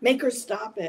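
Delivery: put-on high scream. Telling a story, quoting what the nurse was screaming, imitating a nurse screaming. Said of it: "the nurse who did all this was screaming".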